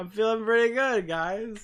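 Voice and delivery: groggy, sleepy, just-woke-up voice. Greeting others on a call: groggy just-woke-up voice. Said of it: "you can hear it in my voice that I just woke up".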